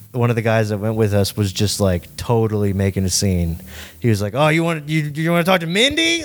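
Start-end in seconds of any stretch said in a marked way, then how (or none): 4.3-6.2 put-on rowdy teasing, loud and swooping. Retelling how a guy in their group made a scene, imitating him getting loud. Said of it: "Like getting real loud".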